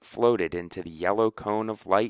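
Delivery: plain reading voice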